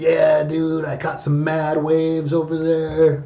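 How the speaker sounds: laid-back beach surfer talk. Suggesting how a player could voice a palm tree Dryas, with a surfer accent. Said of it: "like with a surfer accent".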